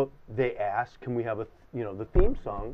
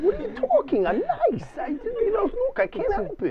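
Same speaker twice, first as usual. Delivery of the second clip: put-on very high, swooping, sing-song old man rat voice. Showing the others the rat character's voice: Mendel the rat voice.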